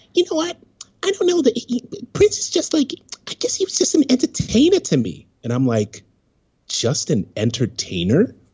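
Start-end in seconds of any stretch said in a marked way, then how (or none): 0.1-5.2 very high, squeaky, rapidly rattled-off chattering voice. Retelling what a woman said, imitating her squeaky voice. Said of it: "she had one of those like squeaky".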